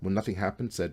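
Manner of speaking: ordinary delivery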